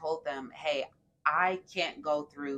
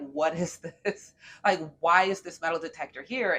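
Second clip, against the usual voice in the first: alarmed, freaked-out, flipping-out voice, losing control; 4 dB louder than usual. Retelling questioning the security guy at the door, acting out own freaking out. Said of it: "I'm kind of flipping out in my voice".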